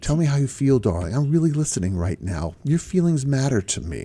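calm, soothing, reassuring counselor-style voice. Demonstrating the voice a husband should not use with his wife: calm, soothing counselor voice. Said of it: "my calm, soothing counselor voice".

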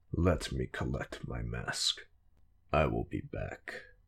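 very low, soft, hushed rumbling growl. Reading a story, voice a hardened warlord agreeing to join a fight before stepping out, in a deep growl.

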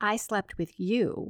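usual speaking voice

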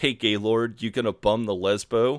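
lightly called-out shout. Retelling a scene where a passerby insults two characters: imitating someone shouting. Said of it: "one of them shouts".

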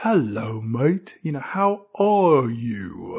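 somber tone at a very slow, dragging pace. Retelling how an actor delivers his lines: imitating Ralph Brown's somber slow tone. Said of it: "in this somber tone where he sounds like a turtle talking".

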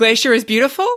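rising pitch. Answering a request for some good news, voice going higher. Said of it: "The voice going higher".

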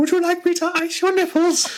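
very high-pitched, pretend put-on lady voice. Describing a man in a dress in the ladies' toilets, in a high-pitched put-on lady voice. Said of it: "Dan in a dress in a high pitched voice".

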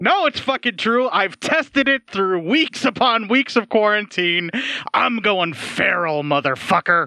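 overly cheery delivery. Speaker tells another person about weeks of quarantine, in an excessively good mood. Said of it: "It really does".

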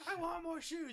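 shrill, demanding, high, loud shout. Picturing a woman yelling at a man holding two bags: imitating a woman yelling. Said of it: "some woman yelling at him".

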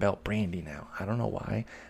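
ordinary delivery

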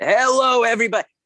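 put-on radio announcer voice. Retelling picking up the microphone at a first bar mitzvah, in a best radio voice. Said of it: "in my best radio voice said".

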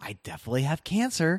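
mock, completely sunny, bright, high-pitched cheerfulness. Retelling a mother character's line from a cult film, in a mock-sunny voice. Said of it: "she says in this completely sunny voice".

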